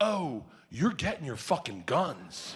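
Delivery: acted, slow, dead-serious, completely earnest, no joking. Retelling what the clerk said after the joke: imitating someone dead serious. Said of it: "he looks at me dead serious and he goes".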